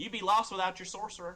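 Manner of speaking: soft, quick, gentle delivery with a smile. Narrating a story, voicing a king's reply to her, speaking softly with a smile. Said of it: "he kind of smiles softly and he says".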